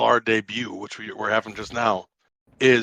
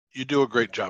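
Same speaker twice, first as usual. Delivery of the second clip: speaking with mouth full, chewing. Complimenting someone's creative work while still chewing a snack, talking with mouth full. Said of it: "Sorry, I was chewing".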